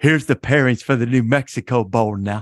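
badly done announcer voice, hard stress on final now. Retelling setting up a joke for a colleague: poor Bob Davy impression. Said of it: "I did my poor Bob Davy".

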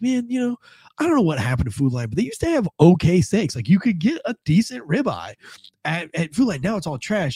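put-on, pointedly loud, sing-song sarcasm. Retelling speaking loud enough for the guy at the window to hear, retelling a loud sarcastic remark. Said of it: "I was trying to be like loud enough sarcastically so that the guy could hear my disgust".

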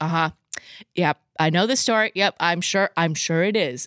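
plain

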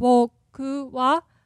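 "boku" starts low, rises, stays high. Explaining flat accent with the particle wa: boku wa low then high. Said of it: "So it's flat, right? Boku wa, low, high".

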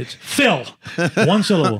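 irritated, insistent, mildly angry. Retelling how a coworker corrected the name, imitating Phil getting kinda angry. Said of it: "he get kinda angry about it".

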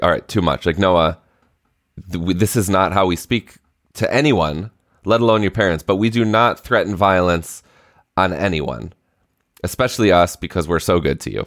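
plain

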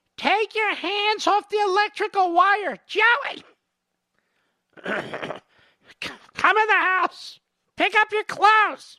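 very high, scolding, nagging woman's voice. Mocking a critic by imagining his mother calling him, imitating his mother's voice. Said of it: "You can hear his mommy now".

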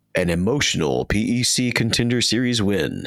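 slow, announcer-style super radio voice. Narrating an intro for a little video, super radio voice. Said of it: "I got to turn on my super radio voice for this one".

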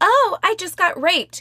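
sneering, mocking put-on falsetto, pitched high. Reading aloud a quoted man's mocking imitation: mocking falsetto imitation. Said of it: "he hikes his voice up to a falsetto in imitation".

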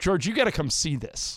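ordinary talk, nothing marked

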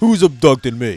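mock low teen boy voice. Quoting a 14-year-old boy, the speaker imitates a teen boy's low voice. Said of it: "They start to get a low voice".

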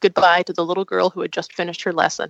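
plain reading voice

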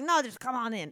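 heavy put-on Eastern European accent. Recounting to a friend what a driver said when insisting she get in, imitating him in a thick Eastern European accent. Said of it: "a very thick Eastern European accent".

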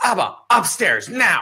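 high, demanding, commanding yell. Retelling a child's demand before basketball: imitating Shia yelling. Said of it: "yelling at me".

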